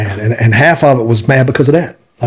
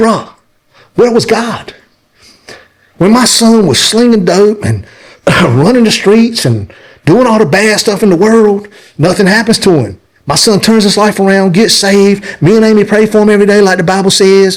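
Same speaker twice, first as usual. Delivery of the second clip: put-on angry, furious outburst, higher; 9 semitones higher than usual. Retelling what he said at the funeral when asked what was wrong: retelling his own furious rant. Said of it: "I'm just livid. I'm mad".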